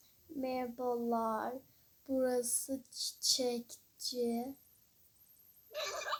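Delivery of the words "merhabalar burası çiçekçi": very slow, drawn-out delivery. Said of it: "Niye bu kadar yavaş konuşuyor ya?".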